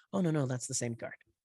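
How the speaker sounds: ordinary talk, nothing marked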